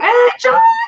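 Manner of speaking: voice cracking up, high and loud. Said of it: "Did you hear my voice crack?".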